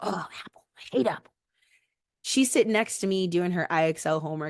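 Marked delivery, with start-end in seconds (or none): 0.0-1.3 irritated, muttered grumbling under the breath. Retelling grumbling while uploading files: imitating own grumbling under breath. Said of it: "grumbling under my voice".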